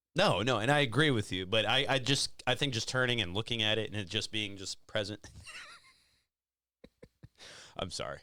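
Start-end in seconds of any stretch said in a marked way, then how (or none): 2.5-8.2 giggly speech broken by laughter. Apologizing to the other speaker while trying to explain, laughing while talking. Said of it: "I don't mean to laugh".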